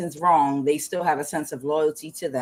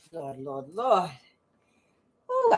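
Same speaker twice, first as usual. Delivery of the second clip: breathless, quieter; 4 dB quieter than usual. Greeting viewers after dancing, out of breath. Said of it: "out of breath, child".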